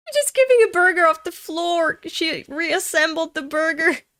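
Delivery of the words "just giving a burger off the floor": loud words breaking through laughter while talking. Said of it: "I'm so sorry for laughing".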